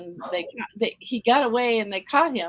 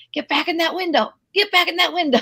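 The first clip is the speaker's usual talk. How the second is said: put-on high, loud woman's shouting voice; 7 semitones higher, 5 dB louder than usual. Retelling a lady yelling at a child on a windowsill: imitating a woman yelling. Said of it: "this lady was yelling".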